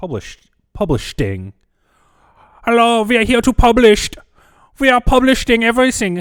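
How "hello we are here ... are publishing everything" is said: very shrill, very loud, clumsy German accent. Joking around for viewers, in a bad German accent. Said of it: "I'm really bad at doing a German accent".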